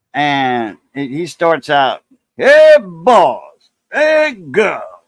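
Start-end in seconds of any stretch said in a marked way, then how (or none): 2.3-4.8 put-on loud, swooping, drawn-out blustery drawl, "boys" stretched out. Talking about a buddy from Baton Rouge, the speaker copies how he starts out: Foghorn Leghorn voice. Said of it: "he sounds like Foghorn Leghorn".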